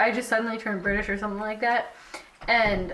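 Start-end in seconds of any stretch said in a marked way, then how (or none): none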